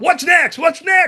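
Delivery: high, impatient shouting, repeated. Speaker recounts Leon repeatedly asking him mid-show, imitating Leon yelling. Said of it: "Leon's yelling shit".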